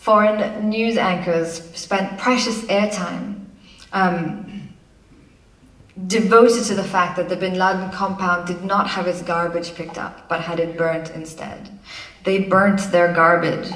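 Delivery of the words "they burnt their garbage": loud American accent done on purpose. Mocking foreign news presenters' coverage, put-on American accent. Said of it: "that was my American accent".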